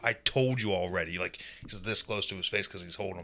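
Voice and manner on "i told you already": raised, fed-up, exasperated, out-of-patience voice. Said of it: "Finally, he got fed up".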